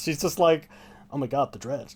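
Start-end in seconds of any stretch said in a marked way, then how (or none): 1.1-1.9 completely flat, deadpan delivery. Describing a film character and imitating Janeane Garofalo's flat delivery. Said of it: "Her delivery is so flat in this".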